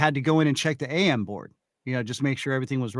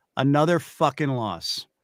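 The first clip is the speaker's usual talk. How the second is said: play-acted voice dripping with disgust. Retelling what an announcer said on a live mic: imitating a disgusted announcer. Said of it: "the disgust in his voice".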